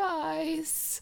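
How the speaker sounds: put-on frail voice. Retelling how a teacher in a show talks: imitating a frail voice. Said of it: "he has that, like, frail voice".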